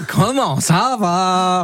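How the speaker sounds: slow, drawn-out mock Swiss accent.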